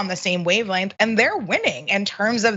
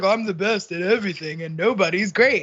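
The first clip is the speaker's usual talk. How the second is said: half-hearted, weak, loosely done put-on voice. Showing how a politician puffs himself up: weak Donald Trump impersonation.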